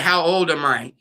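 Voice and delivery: ordinary talk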